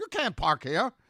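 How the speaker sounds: loud, high-pitched squeaky voice. Retelling being told off for parking, the speaker imitates a woman squeaking. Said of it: "this foreign woman squeaking at me".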